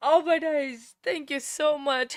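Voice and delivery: tearful, crying voice. Thanking every single one of the people listening: crying. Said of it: "I'm crying".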